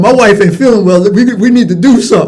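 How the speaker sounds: loud, stern, forceful voice. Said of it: "you get that stern voice".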